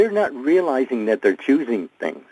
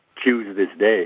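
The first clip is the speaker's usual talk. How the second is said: ordinary delivery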